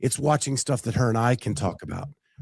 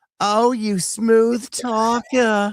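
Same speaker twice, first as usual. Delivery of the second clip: high, slow, stretched-out drawl impression. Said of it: "all I could think of is Marissa Tomei going".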